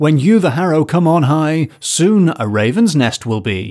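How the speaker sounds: wrathful, angry, oracle-like pronouncing voice. Retelling a quarrel with the Abbot of Vale Royal, mock-angry prophecy. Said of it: "in an angry tone of voice".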